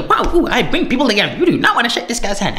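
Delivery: high, fast mock voice patter.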